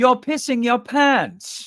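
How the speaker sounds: terrible fake English accent, very high-pitched. Listing items, the speaker says the last one in a terrible english accent. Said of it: "forgive my terrible English accent".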